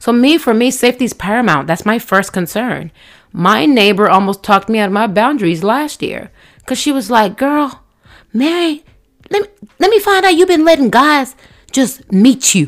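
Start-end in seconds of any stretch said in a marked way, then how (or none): 7.4-12.7 put-on higher-pitched teasing Southern accent. Retelling a neighbor's warning about dating: imitating a southern neighbor. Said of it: "she's very Southern".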